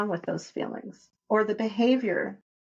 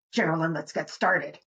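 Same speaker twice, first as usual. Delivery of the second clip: irritated, frustrated, agitated low-pitched voice; 4 semitones lower than usual. Acting out how the other host might start the podcast, mock-agitated voice. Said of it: "in like a kind of agitated voice".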